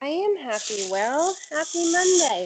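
loud, slow, high, full-voiced, drawn-out delivery. Greeting the other speaker with a happy monday: loud. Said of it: "I know that was probably loud".

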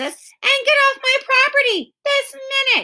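very high, shrill shout. A girl orders the boys off her property, shouting. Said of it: "shouted Beezus".

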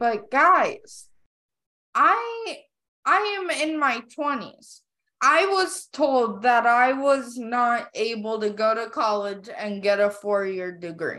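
fired-up, animated, swooping, emphatic delivery. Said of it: "I know I'm raising my voice".

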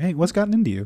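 unbothered, relaxed tone. Retelling a movie scene where Big Dan speaks, imitating Big Dan, really calm. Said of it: "he's, like, really calm".

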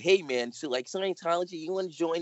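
high-pitched cartoon boy voice. Retelling how she used to call people, doing the Bart Simpson voice. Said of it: "do the Bart Simpson voice".

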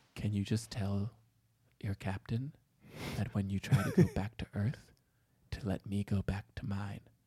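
very soft, sinister horror-villain voice. The speaker reenacts how a woman made her request, imitating a horror-film villain delivery. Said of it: "like you were the villain in a horror film".

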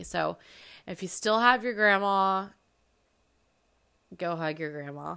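getting emotional mid-sentence, urging tone. Speaker urges viewers who still have their grandma to hug her, getting emotional. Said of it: "I'm going to get emotional".

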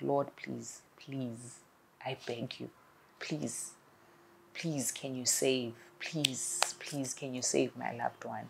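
soft, repeated, mock desperate pleading. Speaker recounts a bereaved woman's prayer for her loved one, retelling a desperate plea. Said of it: "I was begging God that".

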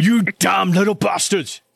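put-on British accent slipping through. Game master voicing a character who grabs the player, in an accidental British accent. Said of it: "that's not his voice. He's not British".

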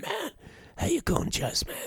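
wrecked, rasping voice, pitched very high. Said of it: "he talks like that".

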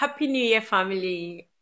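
high, loud, excited, cheery voice.

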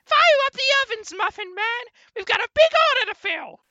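very high, loud, little squeaky voice. Doing a gingerbread impression for the others: Gingy voice. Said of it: "scarily good as a gingerbread impression".

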